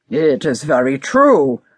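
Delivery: somewhat stern. Narrator reads an ogre answering a cat, somewhat sternly. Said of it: "which belonged to an ogre".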